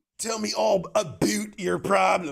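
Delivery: cartoonish American accent. Joking about answering a polite Canadian: South Park style American. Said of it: "South Park style".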